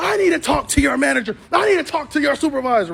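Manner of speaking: play-acted angry, forceful, insistent yelling. Mover retelling what a customer said when she came back: retelling a customer's yelling. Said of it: "She comes back yelling and screaming again".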